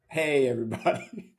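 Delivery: speech broken up by laughter, laughing through. Newly introduced guest greets everyone, laughing while talking. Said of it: "I'm laughing already".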